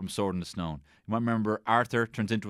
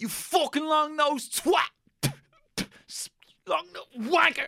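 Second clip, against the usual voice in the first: mock shouting, much higher. Retelling a kid at the zoo yelling at the tapirs, retelling a kid's shouting. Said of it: "there was this fucking kid shouting at the tapirs".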